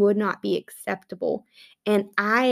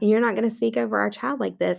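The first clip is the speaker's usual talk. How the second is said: put-on loving but firm tone. Speaker retells what he told her about how they speak at home, retelling a loving but firm tone. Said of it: "in a very loving but firm way".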